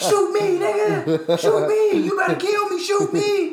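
put-on very high, slow, drawn-out drunken hollering. Retelling a shooting at a party, imitating Terrence yelling. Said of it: "Terrence is yelling".

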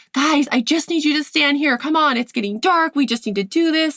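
high-pitched yell. Recounting setting up kids for photos as it got dark, retelling a yell. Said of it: "I'm yelling at them like".

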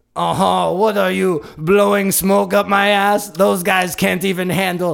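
terrible fake French accent. Podcast host switching into a French accent on the spot, bad French accent. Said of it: "my French is going to be terrible".

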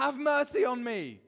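high, loud, desperate yell at full volume. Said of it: "keep yelling at the top of my lungs".

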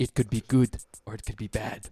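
poor put-on South African accent. Doing an impression of Elon Musk talking about the singularity: terrible Elon Musk impression. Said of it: "I'm doing a terrible impression".

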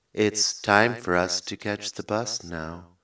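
menacing, scary computer voice. Telling how they scare their children, the speaker does the HAL voice. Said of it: "doing the HAL voice".

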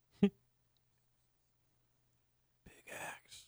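playful, joking, hushed whisper. Jokingly showing how to say the promo code in stores: joking whisper. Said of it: "You have to whisper it".

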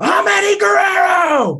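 shrill, all-out, high-pitched holler at top volume. Retelling a story of yelling as a third grader: imitating own childhood yelling. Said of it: "a third grader just yelling".

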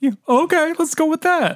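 squeaky mocking voice. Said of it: "And they're like".

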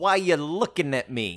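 put-on fifties greaser voice. Recapping a scene where one character questions another, 50s greaser voice. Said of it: "talking like a 50s greaser".

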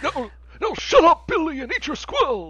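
put-on very high, swooping, yelling old-man voice. Imagining a future old person recalling the 2000s, in a Bernie Sanders old-guy voice. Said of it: "I don't want Bernie Sanders to be my default old guy voice".

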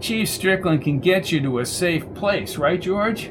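plain

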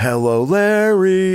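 slow, high-pitched announcer-style call.

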